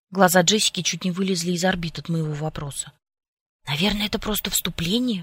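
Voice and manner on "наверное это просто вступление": whispered, hushed voice. Watching a zombie film, she answers the narrator's question, whispering back. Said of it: "прошептала она в ответ".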